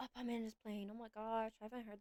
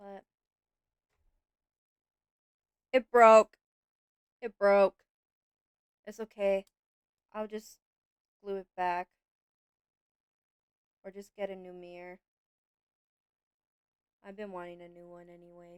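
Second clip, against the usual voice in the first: sorrowful, sad voice, said very loud; 2 semitones lower, 17 dB louder than usual. After saying they could have done better, sounding sad. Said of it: "The way I sound so sad about it".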